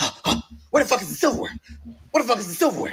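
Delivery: mock panicked voice. Retelling a frantic search for the silverware: imitating own panic. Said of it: "So I'm panicking".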